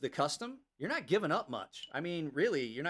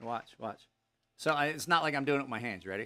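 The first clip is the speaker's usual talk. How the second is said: normal talking voice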